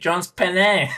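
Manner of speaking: play-acted, high, screamed yelling outburst. Recalling a favorite moment from Soma's videos: imitating Soma screaming. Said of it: "especially when he starts screaming".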